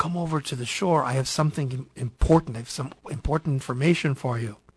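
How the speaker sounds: plain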